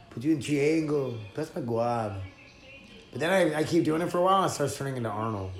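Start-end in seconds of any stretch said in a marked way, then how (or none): 0.2-2.2 homemade, put-on Brazilian accent. Showing the put-on voice used when rolling: brazilian accent. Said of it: "my Brazilian accent".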